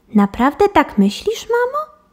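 very high-pitched, incredulous, disbelieving tone. Franklin answers his mother's remark about his sister, asking in disbelief. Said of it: "Spytał z niedowierzaniem Franklin".

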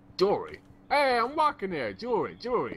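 put-on New York accent, pitched way up high. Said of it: "Is that New York?".

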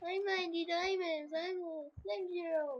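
put-on trolling voice. Telling viewers about voice trolling and demonstrating it: voice trolling voice. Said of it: "This is my voice trolling voice".

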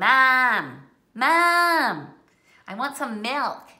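put-on very loud, very slow, nasal Midwestern accent. Parent imitating the cousins calling to their moms, nasal Michigan vowels. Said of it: "They tend to say their vowels kind of nasally".

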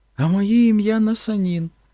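bright, happy, joyful, very high-pitched voice. Narrator reads a three-year-old girl telling a man her name, joyfully announcing. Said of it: "радісно повідомила вона".

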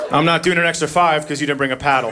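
ordinary delivery

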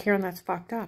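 normal talking voice

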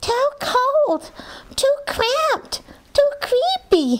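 very high, tiny, squeaky mouse voice. A narrator reads little Mortimer's complaint, squeaking. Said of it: "he squeaked".

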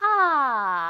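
fourth tone on "a", sliding down from top. Lesson on the fourth tone, practicing a syllable: falling fourth tone on a. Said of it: "사성은 가장 높은 음에서 이렇게 쭈르륵 떨어지는 음인데".

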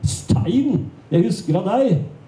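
mock enthusiastic exclaiming. Narrator recounts guessing who a man is on meeting him, exclaiming with great enthusiasm. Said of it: "utbrøt med stor begeistring".

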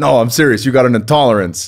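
thick, put-on New York accent. Retelling what a man told him, in a thick New York accent. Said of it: "he's got a thick New York accent".

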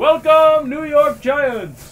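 high, loud, slow called-out delivery. Repeating the movie line for the other speaker to guess, King Julien impression. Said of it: "a pretty good impersonation".

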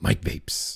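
breathy, whispered character voice. Saying the name in the Mike Vapes voice. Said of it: "all I can say in the Mike Vapes voice is".

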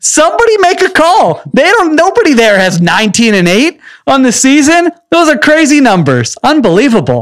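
very high, wide-ranging amazed hype.

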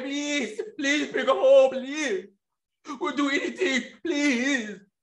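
crying, begging plea through fake tears. Mocking a father's televised plea for his daughter's return: mock-crying Sergio Solis plea. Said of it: "Sergio cried".

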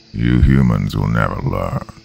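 very deep, very low, rough, gravelly creature growl. Narrating a story, the biggest creature speaks to the humans in a gravelly growl. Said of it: "a gravelly voice growled".

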